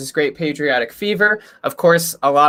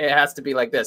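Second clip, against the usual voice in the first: plain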